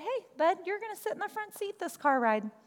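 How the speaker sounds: mock nonchalant tone. Parent retelling what they told their kid while loading the car, retelling a nonchalant remark. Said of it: "I just really nonchalantly said".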